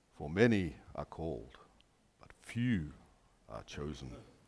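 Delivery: very low, hushed, mysterious voice. Quoting a scripture verse while putting on a voice, mysterious Winston Churchill voice. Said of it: "Let me put on my mysterious voice".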